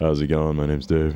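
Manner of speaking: put-on, really deep, low voice. Showing one of several put-on voices: put-on really deep voice. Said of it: "It's either really deep and I'm like".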